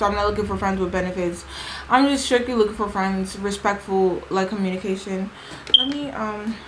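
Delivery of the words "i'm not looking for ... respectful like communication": ordinary talk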